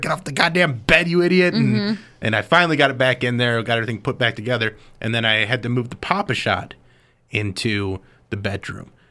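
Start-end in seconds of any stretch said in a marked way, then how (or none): 0.0-1.5 high, acted-out yell. Telling a story about the dog jumping on the bed, retelling a yell. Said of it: "I'm yelling at her".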